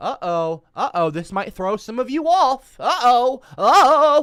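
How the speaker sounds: sarcastic mocking. Explaining gender terms to listeners, the speaker teases them with sarcastic mocking. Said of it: "I'm being sarcastic, I'm mocking you".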